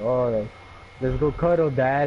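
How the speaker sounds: normal talking voice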